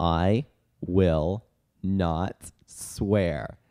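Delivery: very slow, low, drawn-out delivery. Retelling what a talking bird said once let out, very slow speech. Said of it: "he started speaking very slowly".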